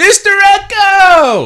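shrill, very loud, high, swooping, drawn-out yell. Saying what would be yelled on seeing him at the airport: pretend yelling a name. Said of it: "I would have yelled out".

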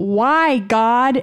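high scream. Retelling how a gal sprayed in the face reacted: imitating a scream. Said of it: "immediately she screams".

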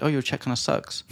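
normal talking voice

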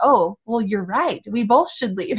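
plain

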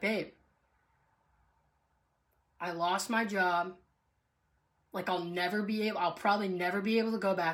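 ordinary delivery

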